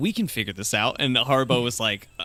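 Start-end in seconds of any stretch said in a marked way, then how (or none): none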